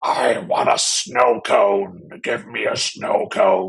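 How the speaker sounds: slow, loud, rough, drawn-out demonic growl. Recalling clowning around to make someone laugh, in a demon voice. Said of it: "sort of like a demon asking for a frozen treat".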